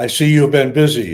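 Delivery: thick, heavy put-on Czech accent. Retelling a phone call from a Czech man who recognised him, thick Czech accent. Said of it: "big, thick Czech accent".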